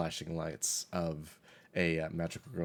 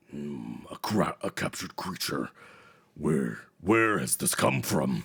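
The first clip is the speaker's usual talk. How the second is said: another, somewhat deeper, slightly raised voice; 2 semitones lower, 6 dB louder than usual. Voicing a second voice heard from the librarian: a little deeper voice. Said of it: "this time maybe a little deeper".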